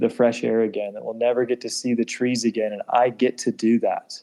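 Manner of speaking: ordinary delivery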